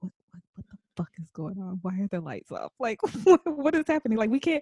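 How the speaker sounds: imitated whisper. Retelling a confused exchange in a dark room: imitating a whisper. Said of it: "whispering to each other".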